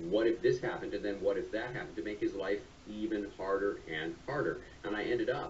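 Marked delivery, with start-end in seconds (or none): none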